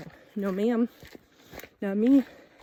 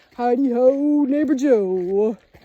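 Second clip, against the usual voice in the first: loud, slow, mock-intimidating, menacing voice. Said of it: "That was my very intimidating voice".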